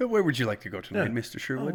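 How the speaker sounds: voice of a talking car. Voicing a talking car that speaks in Elon Musk's voice. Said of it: "But it's Elon's voice".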